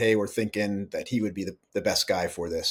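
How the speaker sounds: ordinary delivery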